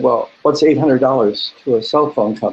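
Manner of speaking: ordinary talk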